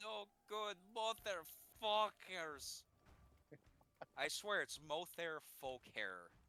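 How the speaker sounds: slight Scottish accent. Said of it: "like you were going a bit Scottish there".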